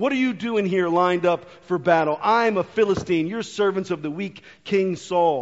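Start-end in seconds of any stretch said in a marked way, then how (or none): none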